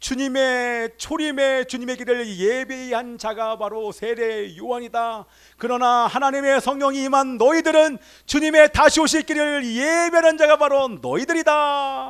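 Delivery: slow, loud, godlike proclaiming voice.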